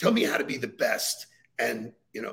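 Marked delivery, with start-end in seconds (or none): none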